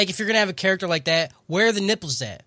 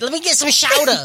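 put-on New York Brooklyn accent. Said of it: "he sounds like he's from Brooklyn trying to say chowder".

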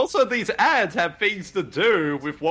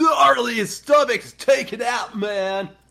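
high, put-on surfer-dude voice; 5 semitones higher than usual. Watching a game with others, the speaker voices a character in a surfer dude voice. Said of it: "It just starts sounding like a surfer dude".

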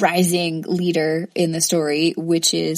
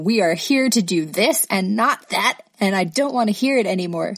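stern, scolding parental voice; 2 semitones higher than usual. Recapping characters scolding people: stern mom voice. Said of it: "mom voice on people".

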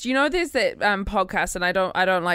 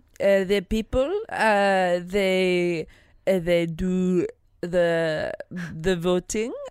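bad, put-on French accent. Asked for their best Lindsay Lohan new weird accent impression, bad Lindsay Lohan accent impression. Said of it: "That was like a weird French bad improv accent".

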